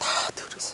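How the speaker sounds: whispered, pleading tone.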